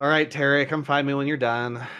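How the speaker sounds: sigh-laden, heaved-out words over heavy sigh. Zan speaks to Terry, who will be busy a while: with a loud sigh. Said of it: "sighs loudly and says".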